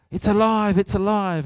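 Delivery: mock animated, worked-up preacher voice, high and loud. Recalling a preacher heard as a boy, imitating an excited preacher. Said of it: "he got all excited and animated".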